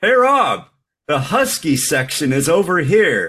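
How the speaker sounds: loud, high, carrying call. Speaker's mother calls to him across store aisles, loud calling out. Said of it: "In a loud voice".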